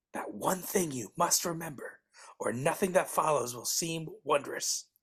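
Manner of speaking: hushed whisper. Narrator of the Scrooge story, for dramatic emphasis: whispering. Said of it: "Why are you whispering?".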